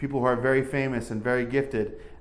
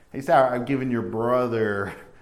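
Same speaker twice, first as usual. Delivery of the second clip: put-on, dry, ironic tone; 4 dB louder than usual. Quoting what he said to sarah, with a mock-ironic tone. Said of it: "you can hear the irony in his voice here. Like".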